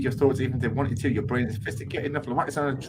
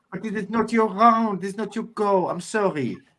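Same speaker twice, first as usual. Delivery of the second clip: put-on Russian accent, pitched up, sounding French; 7 semitones higher than usual. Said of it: "Why are you trying to be French".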